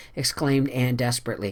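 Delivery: ordinary delivery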